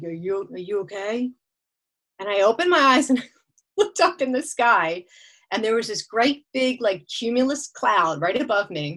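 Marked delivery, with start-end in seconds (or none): 0.0-1.3 daddy voice, lower, quieter, slower. Curled up on a towel, retelling what someone said, in a daddy voice. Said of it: "It was like a daddy voice".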